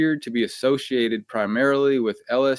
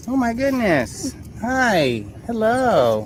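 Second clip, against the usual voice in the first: squeaky, very high puppy-talk voice; 10 semitones higher than usual. Greeting a dog, puppy voice. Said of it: "You have a puppy voice".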